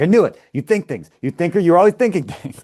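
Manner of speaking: acted-out, all-out, loud, high-pitched screaming fit. Retelling a character screaming at everybody after a guest is kicked out: imitating someone screaming. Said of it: "she goes and screams at everybody".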